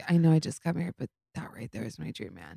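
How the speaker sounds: earnest, wholly dead-serious tone. Retelling what a friend said about a dancing celebrity: imitating someone being serious. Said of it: "she was so serious".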